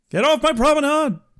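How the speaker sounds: very high-pitched cartoon Texan dad voice. Joking with someone after a mention of Quark, do an Odo voice that sounds like Hank Hill. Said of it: "your Odo in that voice kind of sounds like Hank Hill".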